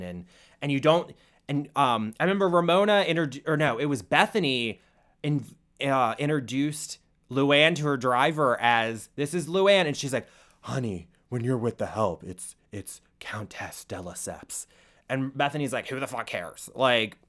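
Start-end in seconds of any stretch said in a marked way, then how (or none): 10.6-14.7 deep, held-back smoker's voice, low and soft. Retelling what Luann de Lesseps said to Bethany, imitating her deep smoker's voice. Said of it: "She has a deep smoker's voice".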